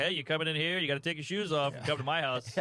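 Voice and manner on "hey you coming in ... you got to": plain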